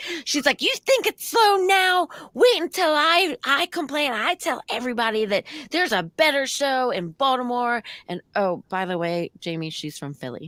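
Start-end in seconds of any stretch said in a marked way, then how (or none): 0.1-7.8 put-on woman's yell at much higher pitch. Telling a listener about a woman who complained, retelling her yelling. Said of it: "And so she's yelling".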